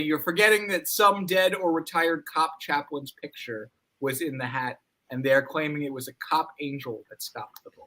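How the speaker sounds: usual speaking voice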